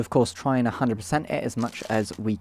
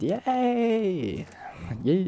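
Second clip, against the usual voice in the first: high, cracking voice on a drawn-out yay; 8 semitones higher than usual. Cheering while checking inside the cartridge: weird voice crack. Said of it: "That was a weird voice crack thing".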